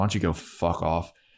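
put-on angry voice. Retelling a scene where Spike is still angry: imitating pissed-off Spike. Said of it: "he's still, like, pissed off".

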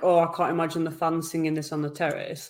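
usual speaking voice

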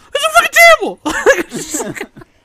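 very high, very loud, shrill, swooping, drawn-out. Acting out how Nick reacts, imitating Nick's voice getting higher. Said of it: "When his voice gets higher".

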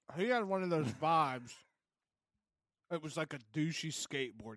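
talking with a mouthful of chocolate. A speaker describes a man from a trip, talking with a mouthful of chocolate. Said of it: "I have a mouthful of chocolate right now".

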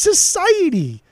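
high, loud, worked-up, agitated yelling.

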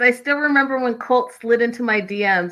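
ordinary talk, nothing marked

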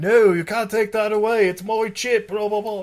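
horrible fake English accent. Quoting a doctor character trying to do an english accent, in a horrible fake english accent. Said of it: "trying to do like an English accent".

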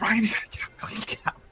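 breathy, barely voiced, very quiet whisper. In a role-play, waking Ryan, the head of the cabin, in a hushed whisper. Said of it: "like hushed whispers".

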